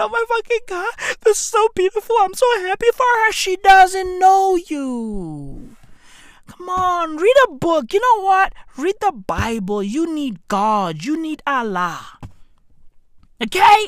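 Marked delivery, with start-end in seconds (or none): 0.0-3.3 acted weepy, gushing sobbing, high and rushed. Mocking Gen Z viewers crying on YouTube: imitating fans crying. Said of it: "legit crying on YouTube over the fact".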